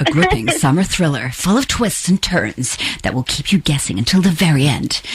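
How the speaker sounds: put-on dramatic movie-trailer announcer narration voice. Host reads the new thriller's blurb to the author; best movie voice. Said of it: "Shall I do my best kind of movie voice?".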